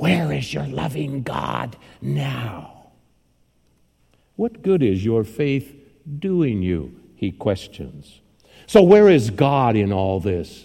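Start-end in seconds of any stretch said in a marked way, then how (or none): 0.0-7.0 taunting devilish hiss, drawn-out "now". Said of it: "he hisses out".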